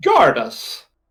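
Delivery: posh little creature voice, squeaky. Voicing a kobold that speaks: squeaky posh kobold voice. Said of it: "It says".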